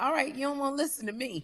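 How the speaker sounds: snippy, tart voice. Retelling how another speaker answered her: imitating a snippy tone. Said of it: "got the nerve to take that tone like".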